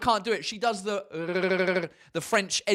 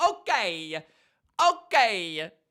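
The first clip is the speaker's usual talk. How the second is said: Italian accent on okay, okay. Imitating the way Italians say it, in an Italian accent. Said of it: "the way the Italians say".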